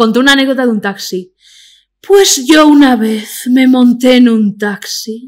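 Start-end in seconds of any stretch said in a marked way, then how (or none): 2.0-5.3 very slow sultry put-on drawl, every word dragged. Retelling her taxi anecdote the way she talks, in Ana Milán voice. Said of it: "la voy a hacer como habla ella".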